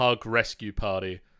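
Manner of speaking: usual speaking voice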